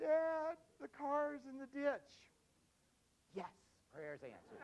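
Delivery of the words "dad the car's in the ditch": very high, loud, trembling, shaky voice, slowed. Retelling a phone call from his son, imitating a shaky voice. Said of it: "Kind of a shaky voice".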